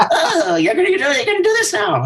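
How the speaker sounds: very high, swooping, sing-song cartoon voice. Joking about answering the producer's talkback mic: SpongeBob voice. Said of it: "my perfect impression of SpongeBob".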